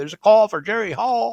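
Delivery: high, loud Southern drawl, announcer-style. Retelling how the receptionist paged calls: imitating Penny's Southern drawl. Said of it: "had a Southern drawl".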